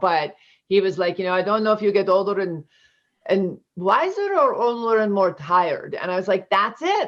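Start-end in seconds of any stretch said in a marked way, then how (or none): 1.3-5.9 put-on thick, heavy, swooping Italian accent. Quoting an Italian immigrant, in a thick Italian accent. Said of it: "I can't speak like about him without using his accent".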